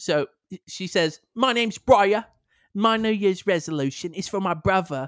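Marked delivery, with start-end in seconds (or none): 1.3-5.1 put-on British woman's voice, pitched higher. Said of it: "an [name] voice".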